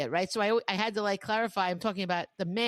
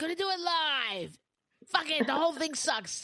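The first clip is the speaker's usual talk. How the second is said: crazy rant, pitched up and stretched out; 7 semitones higher than usual. Doing an imitation of a guy who goes crazy on the air: Bill O'Reilly impression going crazy. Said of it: "doing my best imitation of that guy that goes crazy on the air".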